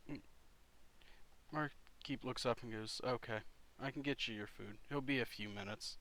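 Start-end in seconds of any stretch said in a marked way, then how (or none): none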